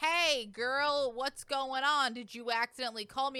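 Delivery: put-on casual chatty voice. Retelling how Soyeon answered a worrying call: imitating Soyeon talking loudly. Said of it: "just loudly on the phone be like".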